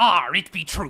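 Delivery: loud cartoon seafaring pirate voice. Speaker shows what people say his West Country voice sounds like: pirate from The Simpsons voice. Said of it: "I sound like the pirate from The Simpsons".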